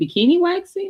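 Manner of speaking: playful ribbing, pitched way up, teasing. Retelling teasing a friend about her waxing work: retelling own teasing. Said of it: "I was teasing her".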